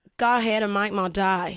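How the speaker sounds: deliberate, slow put-on Australian accent. Performing a famous film line on request: australian accent. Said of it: "in an Australian accent".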